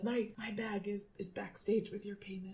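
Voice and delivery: hushed, confidential, leaning-in tone.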